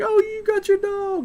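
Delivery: put-on very high, loud, girly squeal.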